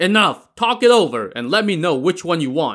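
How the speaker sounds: sharp barked delivery, pitched high. A boatman demands the three travelers decide, barking. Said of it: "the boatman barked".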